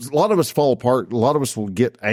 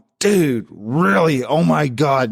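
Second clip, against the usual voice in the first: slow venting, pent-up frustration spilling out; 3 semitones higher than usual. Retelling a friend's reaction to his car breaking down: imitating a frustrated friend. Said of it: "you could hear the frustration".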